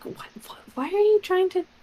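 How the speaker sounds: speaking in a whisper. Whispering to Caden during an auction, in character: whispering. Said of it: "I'll whisper to Caden".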